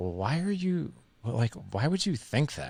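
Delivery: condescending, talking-down, pointed tone. Retelling a friend's reply: imitating a condescending tone. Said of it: "it felt really, like, condescending".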